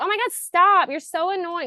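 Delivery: mock yelling, very high and shrill. Retelling playing an extra who yells at an annoying guy: imitating a yell. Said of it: "yelling at him".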